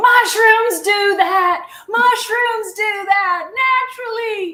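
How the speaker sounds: play-acted very high, slow, loud, drawn-out yell. Retelling shouting back at a tv drug commercial, retelling own yelling. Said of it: "I'm just yelling at it going".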